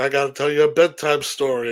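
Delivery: ordinary delivery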